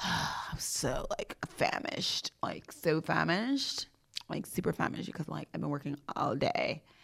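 put-on breathy, hushed millennial valley-girl whisper. Describing a busy day, the speaker tries out a valley girl voice. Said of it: "I'm trying to do like that Valley Girl".

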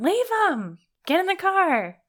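play-acted very high, very slow, swooping, shrill angry yell. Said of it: "the angry girl is just yelling".

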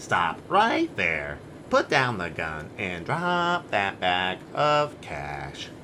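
very low-pitched, deep robot voice. Reading a scene line again when asked, in a robot voice. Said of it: "Why are you reading this with a robot voice?".

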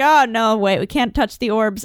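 ordinary talk, nothing marked

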